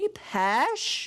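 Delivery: unsettling, odd high tone. A streamer greeting a viewer who just appeared in the chat, creepy. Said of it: "That sounded creepy".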